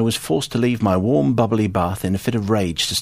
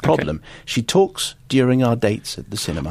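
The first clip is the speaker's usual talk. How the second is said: usual speaking voice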